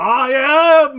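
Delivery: booming, thundering, very high, very loud voice. Telling the listeners what they hear from the burning bush: booming voice. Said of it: "booming voice go".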